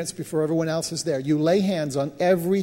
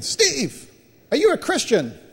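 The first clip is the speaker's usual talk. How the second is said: put-on shrill, very high, swooping yell; 9 semitones higher than usual. Retelling the man whose business he looked after yelling to him on arrival, retelling a yell. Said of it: "he yells out when he gets in".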